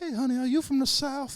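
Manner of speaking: put-on very high-pitched little old lady voice. Recalling elderly women he dealt with at work, the speaker imitates an elderly woman.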